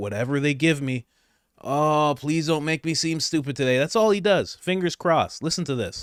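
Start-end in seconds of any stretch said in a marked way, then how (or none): 0.0-3.8 put-on pleading voice. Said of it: "he just crosses his fingers and goes".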